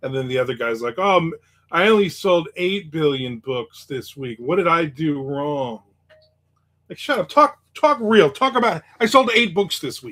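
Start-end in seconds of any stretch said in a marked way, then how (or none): none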